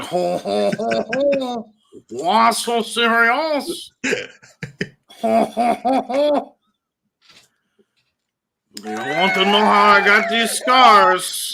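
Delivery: very high-pitched, loud French accent. Imagining what a French Joker would sound like, doing a French Joker voice. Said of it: "the French Joker would be like".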